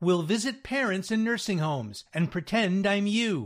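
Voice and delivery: ordinary talk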